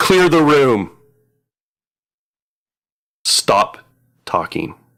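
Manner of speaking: woman's high bellow, held in check. Retelling what a woman says in response, bellowing. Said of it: "the woman bellows out and says".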